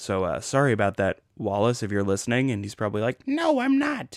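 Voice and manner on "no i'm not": very high, squeaky, poorly done put-on voice. Apologizing for forgetting someone's name, imagining his reply: terrible Wallace impression. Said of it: "That was a terrible impression of him".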